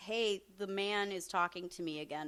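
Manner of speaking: ordinary delivery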